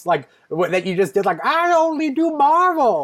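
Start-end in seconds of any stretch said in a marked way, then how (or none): 1.4-3.1 put-on very high, very slow old lady voice. Echoing the voice the other speaker just did, an old lady voice. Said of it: "Was that an old lady voice?".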